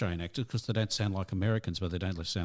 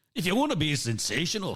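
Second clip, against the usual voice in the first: put-on Scottish accent, sing-song; 10 semitones higher, 3 dB louder than usual. Joking about a band leader's motto in a faux Scottish accent. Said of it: "in faux Scottish accents".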